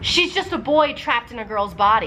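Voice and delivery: ordinary talk, nothing marked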